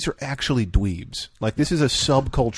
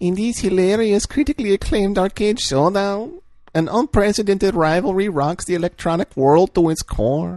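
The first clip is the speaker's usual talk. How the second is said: put-on higher-pitched voice like an old grandmother; 7 semitones higher than usual. Reading a text aloud as if the listener's grandma, in an old grandma voice. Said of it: "I'm gonna read this like I'm your grandma".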